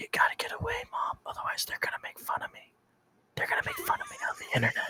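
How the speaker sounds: very quiet, whispered under the breath. Retelling a streamer telling his mom to get away: imitating Cyrax whispering. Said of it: "you can actually hear him whispering".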